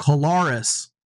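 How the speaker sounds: Kolaris with middle syllable lar stressed. Repeating how a man pronounces his own name, stress on Kolaris's middle syllable. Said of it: "He put capital L-A-R because that's the emphasis".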